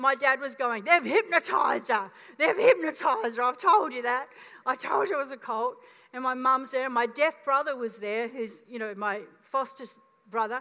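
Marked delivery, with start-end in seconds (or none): 0.8-5.2 put-on loud, enraged, outraged yelling. Quoting the speaker's dad at a baptism, retelling dad's yelling. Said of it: "And he's yelling".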